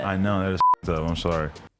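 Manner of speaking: sarcastic careless tone. Answering a complaint about posting a hospital address: sarcastic, couldn't care less. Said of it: "that sounded like a sarcastic f*** who couldn't care less".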